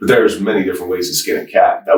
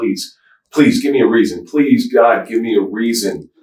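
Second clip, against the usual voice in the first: acted, tearful, pleading voice, as if crying; 4 semitones higher than usual. Recounting a past moment on their knees, retelling the crying plea. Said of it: "And I'm crying".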